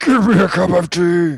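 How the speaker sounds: put-on angry growl. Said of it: "He just gets really angry over everything".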